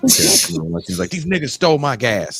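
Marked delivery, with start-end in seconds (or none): 1.1-2.4 mocking, high-pitched, complaining yelling voice. Retelling a dad's rant about stolen gas: imitating dad yelling. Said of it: "Why are you yelling at me like that".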